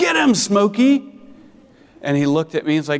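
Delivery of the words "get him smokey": very high, loud yell from a distance. Retelling the moment a mole ran across the yard: retelling a yell. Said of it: "And I yelled".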